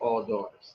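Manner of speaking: very quiet, low, murmured aside. Reading a story aloud and adding an aside: lowered voice for an aside. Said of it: "When I lower my voice".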